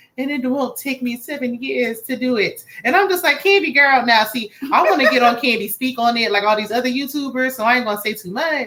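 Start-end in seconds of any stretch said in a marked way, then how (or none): 0.2-2.7 phony, put-on fake British accent. Mocking how a movie ended, Candy's fake British accent. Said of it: "had this fake British accent".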